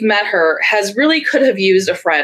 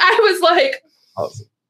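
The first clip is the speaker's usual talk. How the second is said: ordinary talk, nothing marked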